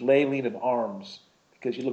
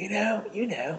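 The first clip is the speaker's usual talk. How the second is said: put-on British accent, higher pitch; 9 semitones higher than usual. Retelling what Justin said to a friend: British accent imitating Justin. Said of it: "my British accent".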